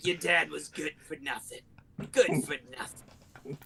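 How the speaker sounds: chain-smoking mom voice, pausing between drags. Acting out a chain-smoking mom complaining about the dad: imitating a chain-smoking mom. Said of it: "she's chain smoking and she's like".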